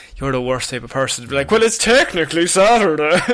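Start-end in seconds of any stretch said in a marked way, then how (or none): 1.5-3.2 pedantic, know-it-all, matter-of-fact tone. Speaking to Connor, acting out how he would reply: imitating Connor. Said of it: "that's a very good impression of you".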